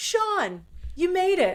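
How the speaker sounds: very high, very slow, drawn-out yell. Retelling a birthday guest greeting a new arrival in a bar: imitating someone yelling. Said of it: "he yells".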